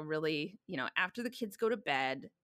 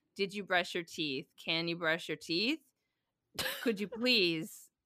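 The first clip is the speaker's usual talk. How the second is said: put-on rising, questioning inflection. Retelling repeated reminders to kids to brush teeth: imitating own questioning inflection. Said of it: "I like the inflection, the actual making it a question".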